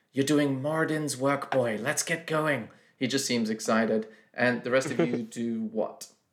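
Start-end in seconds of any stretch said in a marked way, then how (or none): 0.2-2.7 whispering. Voicing a companion speaking as the party departs: whispering in character. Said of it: "he whispers just as you depart".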